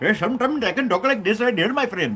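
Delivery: put-on Indian accent.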